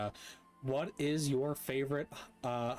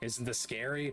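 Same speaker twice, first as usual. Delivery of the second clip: usual speaking voice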